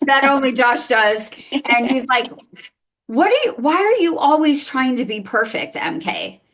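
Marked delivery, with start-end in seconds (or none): 3.1-6.3 put-on sarcastic tone, much higher and slower. Speaker retells what a man said to her, mock-sarcastic quote. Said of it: "in a kind of a sarcastic way".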